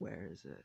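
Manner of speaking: muttering under the breath. Voicing a character asking where the exit is: muttering under his breath. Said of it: "under his breath".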